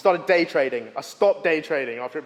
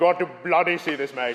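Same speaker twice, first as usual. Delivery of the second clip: attempted Indian accent. Retelling what a school friend said: imitating a friend's Indian accent. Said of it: "said in an accent that I am going to attempt".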